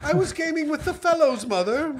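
put-on very high, posh English child voice. A child protests to his mother about his Xbox, in a mock English child voice. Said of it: "The voice changed so much".

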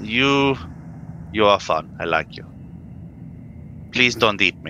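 mock, broadly European accent. A player character speaking to the creature Volus, in a broadly European accent. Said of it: "because I'm a thief, ... It's European, it's fine. It's broadly European!".

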